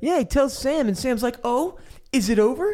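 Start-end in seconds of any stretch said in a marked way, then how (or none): 1.4-2.7 acted, very slow, very drawn-out sarcastic drawl. Retelling a scene where Sam answers Pip: imitating sarcastic Sam. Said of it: "the most sarcastic episode Sam ever has".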